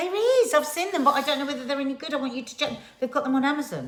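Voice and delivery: high-pitched yelling shout. Insisting to the other speaker that film tripods exist, shouting. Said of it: "Why are you shouting at me?".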